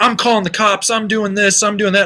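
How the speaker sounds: mild, blustering half-yell, kept small. Retelling the beaten skier's threat: imitating someone screaming. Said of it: "he's screaming".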